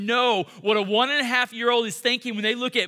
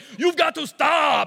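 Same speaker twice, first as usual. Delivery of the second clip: cross, pitched-up, barked delivery; 5 semitones higher, 4 dB louder than usual. Retelling a child fighting over a toy train: Arnold Schwarzenegger voice. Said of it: "when I mimic him, I realize he kinda sounds like Arnold Schwarzenegger".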